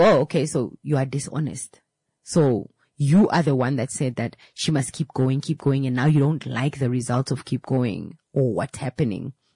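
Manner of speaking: usual speaking voice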